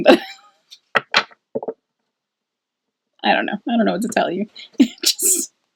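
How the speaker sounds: giggling through the words, swooping pitch. Pulling cards and unable to stop, laughing while talking. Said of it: "I know I'm laughing".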